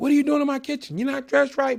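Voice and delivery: put-on yelling. Retelling how a guy confronted him in a kitchen, imitating a guy yelling. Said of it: "He's yelling at me".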